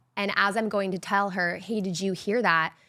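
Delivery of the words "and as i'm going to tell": plain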